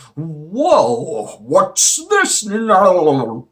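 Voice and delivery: surprised villain voice, high, swooping, "now" stretched out. Video host guessing how Semi-Perfect Cell will react, Semi-Perfect Cell impression. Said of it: "that was my impression of semi perfect cell".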